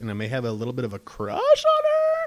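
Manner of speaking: voice jumps up a couple of octaves in pitch. Talking about an actress he is a big fan of, voice jumps up in pitch. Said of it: "How my voice went up like a couple octaves there?".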